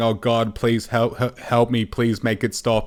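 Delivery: acted voice crying out in pain. Retelling a plea made in agony in hospital: imitating crying out in pain. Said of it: "literally crying out, out in pain".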